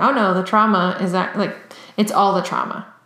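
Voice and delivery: ordinary talk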